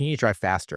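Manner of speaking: plain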